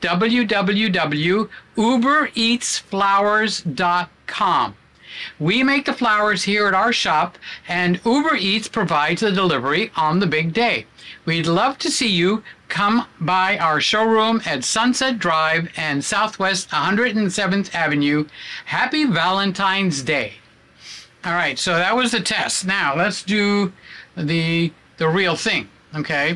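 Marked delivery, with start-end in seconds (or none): 0.0-20.3 happy tone with a smile in the voice. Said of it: "I have to put a smile in my voice".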